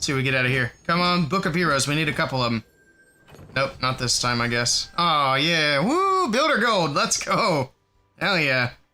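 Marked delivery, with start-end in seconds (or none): 5.8-8.7 heavily sarcastic, full-on sarcasm. Reacting to getting Builder Gold from a Book of Heroes: full-on sarcasm. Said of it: "I accidentally turned the sarcasm all the way on".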